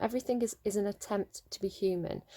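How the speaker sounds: ordinary delivery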